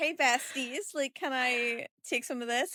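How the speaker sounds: acted syrupy, overly polite, high and slow. Acting out a character asking guards for water: imitating an overly polite ask. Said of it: "And so polite".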